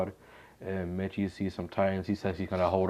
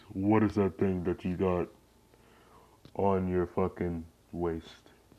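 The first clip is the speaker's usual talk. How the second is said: voice pushed down much deeper, deep and lowered. Retelling the Beast Titan questioning a scared Mitchie: deeper Beast Titan voice. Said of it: "trying to make my voice more deeper".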